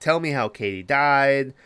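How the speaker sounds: mock imploring, pleading, begging tone. Retelling a film scene where one character questions another: acting out begging. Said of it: "she's begging the girl".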